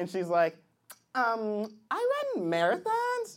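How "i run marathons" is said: put-on girl voice.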